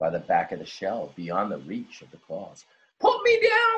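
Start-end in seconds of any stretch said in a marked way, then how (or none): 3.0-3.8 very high, shrill, loud cry. Narrator reading the crab's demand to the dog, crying out. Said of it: "cried the crab".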